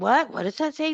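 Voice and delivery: high, unconvincing, put-on fake shock. Mocking how she reacts to her chat: imitating fake shock. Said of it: "she's like".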